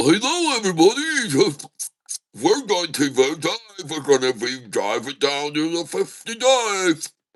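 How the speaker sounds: put-on cartoon voice with swooping, bouncing pitch. Narrating the drive down to a dive, in a Goofy voice. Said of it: "that's my impression of Goofy".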